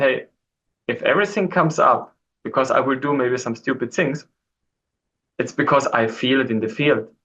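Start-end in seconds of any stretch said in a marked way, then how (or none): none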